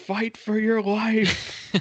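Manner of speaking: mock very high, stretched-out scream. Retelling how Paul Heyman reacted to the bleeding: imitating Paul Heyman yelling. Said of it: "he yells".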